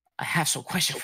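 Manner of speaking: completely serious, earnest, grave delivery. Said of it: "super seriously".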